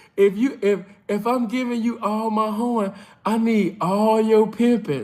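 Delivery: lustful, seductive come-on delivery. Retelling what a woman said: imitating a lustful voice. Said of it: "She said it in a lustful ass spirit".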